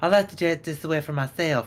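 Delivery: put-on Southern US accent. Imitating what some people say, in a southern accent. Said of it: "I don't know why I do a Southern accent".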